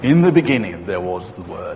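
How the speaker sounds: artificial, put-on, very low deep voice. Quoting how John starts off his creation story, in a put-on deep voice. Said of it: "You've got to have a deep voice to say this".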